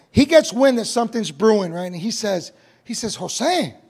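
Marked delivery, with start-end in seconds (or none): 2.9-3.7 put-on concerned, worried tone, heavy with concern. Recalling a friend sensing something brewing, acting out friend's concerned 'Jose'. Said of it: "just like that, like with concern in his voice".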